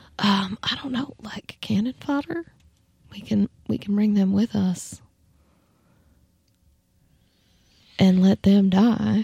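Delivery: very quiet, slow, hushed whisper. In a game, a character whispers to allies so others can't hear; whispering. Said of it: "I whisper really quiet".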